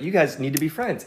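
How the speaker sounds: ordinary delivery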